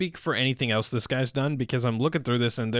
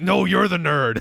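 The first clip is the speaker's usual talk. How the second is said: furious, loud, high-pitched angry shouted comeback; 6 semitones higher, 6 dB louder than usual. Retelling a scene where Bakugo snaps at Deku: imitating Bakugo yelling angrily. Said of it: "he's always just mad no matter what".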